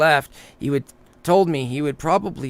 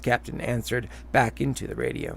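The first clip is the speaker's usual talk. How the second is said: usual speaking voice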